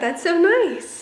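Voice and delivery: high-pitched, slow, gushing tone.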